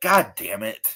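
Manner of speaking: mock exasperated tone.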